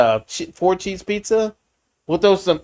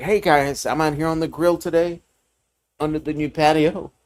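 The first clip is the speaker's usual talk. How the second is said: mock calm, explanatory host-style talk-through voice. Retelling how Greg talks in his grill videos: imitating Greg, nice and calm. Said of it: "he would be out there just like".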